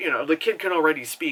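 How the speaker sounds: plain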